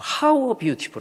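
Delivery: overwhelmed, very slow, drawn out, rising pitch, full of awe.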